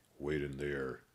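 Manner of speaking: rough guard voice, curt and commanding. Reading a story aloud, the guard tells them to wait, in a rough voice. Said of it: "the guard with a rough voice said".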